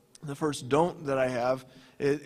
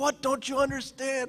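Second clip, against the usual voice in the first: mock, very high-pitched, snapping angry outburst; 10 semitones higher than usual. Speaker recounting a player getting a football play wrong, retelling an angry outburst. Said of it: "I just lost my temper".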